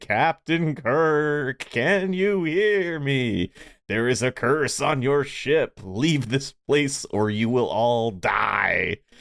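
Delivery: spooky disembodied voice, "die" drawn out. Retelling a tv episode's opening, the speaker quotes a spooky disembodied voice. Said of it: "a spooky voice from nowhere".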